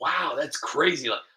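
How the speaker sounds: ordinary talk, nothing marked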